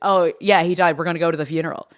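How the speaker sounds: normal talking voice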